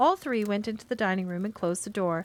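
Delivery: ordinary delivery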